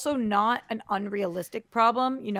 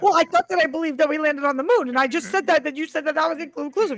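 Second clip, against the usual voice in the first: flustered, panicky, rushed and pitched up; 6 semitones higher, 5 dB louder than usual. Retelling a lie detector test answer from a video: imitating someone panicking. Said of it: "she was, like, panicking".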